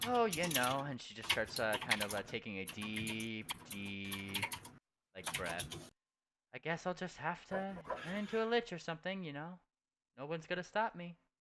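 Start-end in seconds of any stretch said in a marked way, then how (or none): 6.5-11.1 in-character voice, pitched up, heavily sarcastic. Voicing a character who threatens to become a lich: sarcastic in-character line. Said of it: "She's just being very sarcastic".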